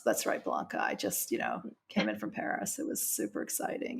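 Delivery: acted nonplussed, dull, very quiet, breathy delivery. Describing dull guests with exciting lives, the speaker plays one answering Blanca: imitating a dull, flat delivery. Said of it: "so nonplussed".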